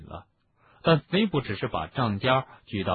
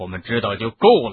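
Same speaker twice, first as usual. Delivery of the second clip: harsh, stern, sharp, raised voice; 8 dB louder than usual. Answering Harry's question, the speaker says it sharply. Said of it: "厉声道".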